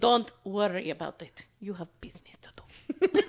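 put-on Russian accent, low, slow and loud. Imitating a mother telling her daughter to get back to work: Russian accent. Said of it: "Don't you love Russian accents?".

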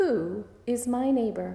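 mock pompous, self-important know-it-all voice. Preacher retelling the lawyer questioning Jesus, in a mock know-it-all voice. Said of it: "in that know-it-all important voice".

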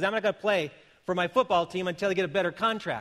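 ordinary talk, nothing marked

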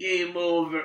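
soft, mournful, heavy-hearted, very sad delivery. Retelling a film scene as a man looks down at a bleeding woman, retelling a very sad line. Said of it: "he very sadly goes".

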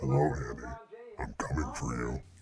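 deep, very low demonic male voice. A caller speaks over the phone in a deep, low, male, demonic voice. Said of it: "A deep, low, male, demonic sounding voice".

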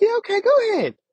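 put-on very high, cheery, happy little girl voice. Retelling a story about their brother, speaker imitates a little girl all happy. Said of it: "she was all happy".

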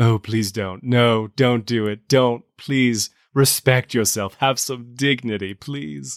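snarky, sarcastic, melancholy and gloomy tone. Acting out a character's line for another speaker: snarky and melancholy. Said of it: "kind of snarky, kind of, kind of, well, somewhat melancholy".

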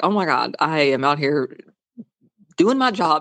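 imitated irritated, pissed-off tone. Retelling a scene with an irritated detective: imitating an irritated detective. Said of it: "He was so pissed".

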